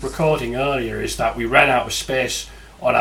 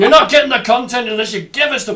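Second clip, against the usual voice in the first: fake Scottish accent, very high-pitched and loud; 10 semitones higher, 6 dB louder than usual. Continuing the joke about paying for content: put-on Scottish accent. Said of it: "I don't know why I'm doing a Scottish accent".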